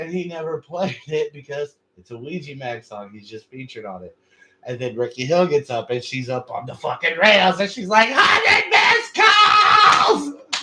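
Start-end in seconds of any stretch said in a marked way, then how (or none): 8.1-10.6 very high, very loud, shrill shrieking scream. Retelling a friend at a concert screaming from a balcony: imitating someone screaming. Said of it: "she's screaming both of 'em".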